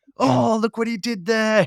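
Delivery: high-pitched, slow, impressed and amused marveling.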